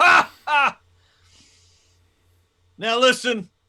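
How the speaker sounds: very high, very loud, shrill sarcastic jeer. A very large character calls out from behind the listener, as Bass, loud and very sarcastic. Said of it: "like a loud, like very sarcastic".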